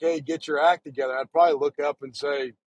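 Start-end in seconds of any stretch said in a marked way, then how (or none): none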